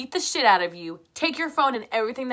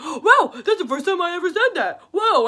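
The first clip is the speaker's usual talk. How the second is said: acted, high, loud, frantic, wound-up blurt; 9 semitones higher, 5 dB louder than usual. Retelling a boyfriend's words during his breakdown: imitating someone freaking out. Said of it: "while he's freaking out".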